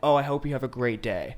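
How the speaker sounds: ordinary delivery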